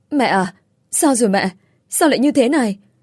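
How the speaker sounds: flustered and hurried. A daughter runs to her mother at the hospital and asks, frantic. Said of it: "hớt hải hỏi".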